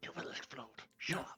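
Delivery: aggressive, fierce, hushed angry whisper. Arguing in character on a work floor: aggressive whispering. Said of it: "aggressive whis-".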